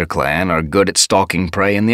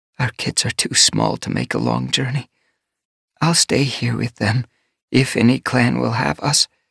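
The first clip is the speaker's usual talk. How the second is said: soft, high, distressed murmur; 5 semitones higher than usual. Narrating a she-cat with tiny kits, speaking in a distressed murmur. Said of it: "the she-cat's voice was a murmur of distress".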